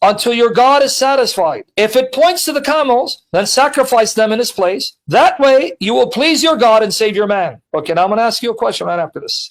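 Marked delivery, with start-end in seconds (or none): none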